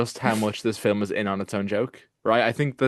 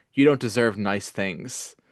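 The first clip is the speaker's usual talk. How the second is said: put-on flat, deadpan delivery. Retelling a funny film line, imitating Eddie's deadpan delivery. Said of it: "so deadpan".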